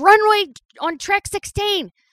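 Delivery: high, loud shout, yelled out. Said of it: "and then Feeney shouted".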